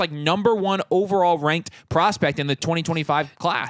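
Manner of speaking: normal talking voice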